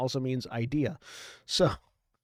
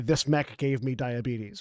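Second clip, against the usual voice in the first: normal talking voice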